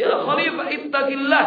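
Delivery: desperate, high-pitched, loud crying shout. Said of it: "langsung dia teriak".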